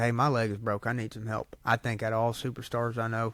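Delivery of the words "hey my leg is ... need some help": ordinary talk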